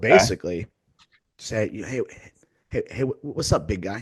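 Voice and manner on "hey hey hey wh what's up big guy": condescending, patronizing, talking-down tone. Retelling own words to a guy with a messed-up collar: imitating own condescending tone. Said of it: "fixing a detail on someone's outfit very condescendingly".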